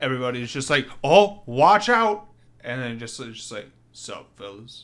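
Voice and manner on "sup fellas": deepest suave cool-guy voice, very quiet and hushed.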